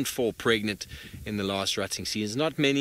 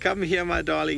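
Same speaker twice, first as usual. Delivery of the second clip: booming, very loud, high, rough snorting animal call; 6 semitones higher, 3 dB louder than usual. Voicing what a male animal says as he calls out, loud snorting voice. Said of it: "he was saying in his very loud, snorting voice".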